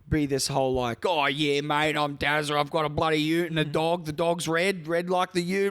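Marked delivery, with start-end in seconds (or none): 1.0-5.7 clichéd Australian bloke voice. Mocking how Australians get shown on screen: stereotypical Australian voice. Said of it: "this is the traditional Australian".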